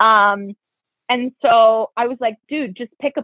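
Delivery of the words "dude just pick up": mock irritated, fed-up, impatient pushing tone. Retelling pushing someone to pick a place: imitating own annoyed voice. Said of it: "I was getting so annoyed".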